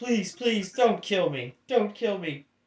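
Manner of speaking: high, sobbing voice, speaking through tears. A character begs not to be killed, crying and pleading. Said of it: "He cries and goes".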